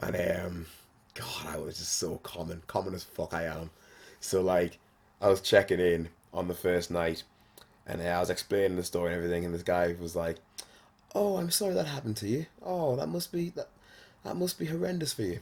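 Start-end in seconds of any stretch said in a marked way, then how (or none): 11.1-15.4 nice, high, polite, sympathetic voice. Retelling checking in and explaining the story to a man, imitating him being polite. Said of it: "you're just so nice and polite".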